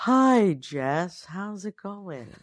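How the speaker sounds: soft, unhurried, sedated, sleepy, tranquil evenness. Imitating an uncle nicknamed Human Valium: imitating Uncle Bruce's calm voice. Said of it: "he always kind of talks like this".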